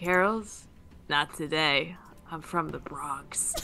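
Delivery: menacing, threatening tone. Speaking to a book just kissed and grabbed, threatening. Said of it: "as threatening as I can to this book".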